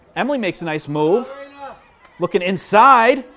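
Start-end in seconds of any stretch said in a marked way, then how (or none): 2.2-3.2 high, slow, very loud full-lung yell. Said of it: "I'm yelling at the top of my lungs".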